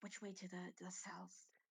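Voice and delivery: muttering under breath. Voicing a character asking which way to the cells: muttering under breath. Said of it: "mutters on his breath".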